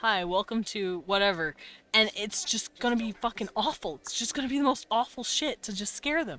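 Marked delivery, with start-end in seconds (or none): 0.0-1.5 robotic voice, slower. Speaker imagines greeting people to scare them, in a robot voice. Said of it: "like a robot voice lady or robot voice man".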